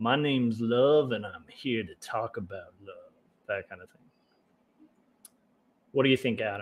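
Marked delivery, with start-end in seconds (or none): 0.0-3.1 bad, cheesy nineties radio DJ patter voice. Joking about a viewer's name as a DJ: Adam Love bad nineties DJ voice. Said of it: "that just sounds like a bad nineties D J".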